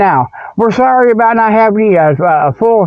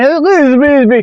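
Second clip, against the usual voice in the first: put-on grumpy old squatch voice, higher; 5 semitones higher than usual. Acting out a crotchety old squatch in a comic advertising bit: crotchety old squatch voice. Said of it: "a crotchety old, you know, squatch".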